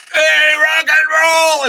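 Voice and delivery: acted, very high rowdy yell. Retelling how the front row heckled during a piano solo: imitating fans screaming. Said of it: "they're screaming at you".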